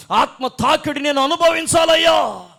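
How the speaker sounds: fervent, high-pitched, loud shouting.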